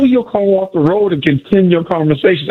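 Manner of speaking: ordinary delivery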